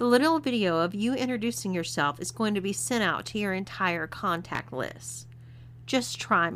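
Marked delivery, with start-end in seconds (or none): none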